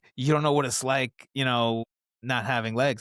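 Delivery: normal talking voice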